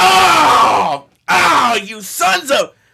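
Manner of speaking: mock angry yell, very high, very drawn out. Retelling how football fans usually react during a game: imitating angry football fans. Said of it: "really just angrier".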